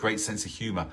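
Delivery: normal talking voice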